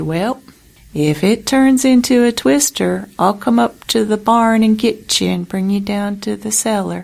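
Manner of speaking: put-on unhurried, slow, drawn-out Kansas accent. Looking up at the sky while feeding his animals in a thunderstorm, he speaks in a slow Kansas drawl. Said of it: "in his slow Kansas drawl".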